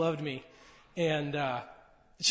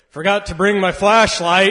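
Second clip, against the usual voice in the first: put-on very loud, booming, boisterous old man voice; 3 semitones higher, 14 dB louder than usual. Recalling Grandpa in the dark fish house, imitating Grandpa's boisterous voice. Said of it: "Grandpa's boisterous voice goes".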